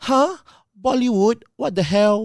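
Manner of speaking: put-on very drawn-out, slow, grating Chinese accent. Retelling how a college acquaintance answered an invitation: grating chinese accent. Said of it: "In that same grating China accent".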